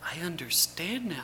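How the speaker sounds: softly. A woman character in the story speaks to someone, softly. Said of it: "she said softly".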